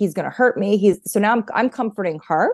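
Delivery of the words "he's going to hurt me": alarmed, panicked, frightened pleading voice. Retelling how the mother reacted on hearing the news: imitating someone panicking. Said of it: "starts to panic".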